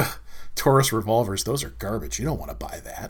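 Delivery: mock dismissive snort. Acting out a bystander in a gun store, imitating a dismissive snort. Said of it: "standing there snorting and going".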